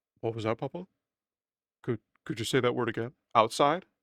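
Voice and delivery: put-on dog voice, curious tone. Papa speaking for his dog whose ears perked up at the word outside, voicing Tolly the dog. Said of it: "She's like".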